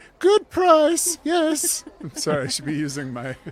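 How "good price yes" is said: very high, loud, squeezed-out forced falsetto. Redoing a reply to a gate official in character: diminutive Stuart voice. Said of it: "diminutive Stuart voice".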